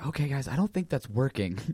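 soft, quiet, low-key murmur. In the group scene, speaking to the rest of the guys, kind of quietly. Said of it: "kind of quietly".

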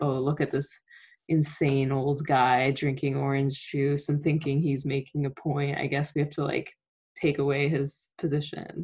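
ordinary talk, nothing marked

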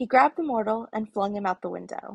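plain

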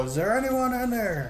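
high, loud yelling. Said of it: "I pound on it and yell".

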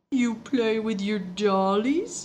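put-on talking like a little baby, babyish baby talk. She answers someone's confession about a doll collection, in a baby voice. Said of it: "She said in a baby voice".

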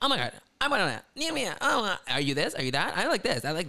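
high, tumbling, nonstop run-on babble. Retelling how contestants talked all competition: imitating high-pitched nonstop talking. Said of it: "they're nonstop talking, like, high-pitched voices".

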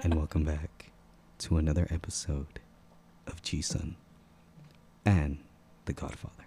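soft, hushed, breathy ASMR murmur. A host opening an episode while the co-host objects, mock asmr whisper. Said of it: "You sound like one of those people".

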